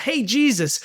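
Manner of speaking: high-pitched yelling. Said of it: "I'd yell out".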